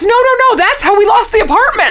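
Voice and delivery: very high, loud, panicked tone.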